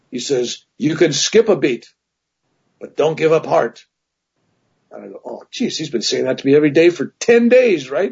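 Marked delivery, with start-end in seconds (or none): 0.8-3.8 put-on Indian accent. Retelling what this voice said to him every day for ten days: imitating Gurnoff's Indian accent. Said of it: "this Indian voice goes".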